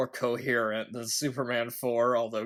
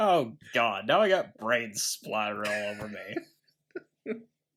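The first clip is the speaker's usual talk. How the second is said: slow, acted, only faintly annoyed delivery; 3 semitones lower than usual. Retelling a movie character's line before the credits, imitating slight annoyance. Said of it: "he only sounds slightly annoyed by it".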